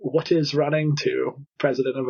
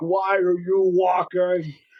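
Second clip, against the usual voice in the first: put-on bellowing, high, every word dragged out; 5 semitones higher than usual. Retelling how a coach shouted at runners caught walking: imitating a coach bellowing. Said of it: "this voice bellowing".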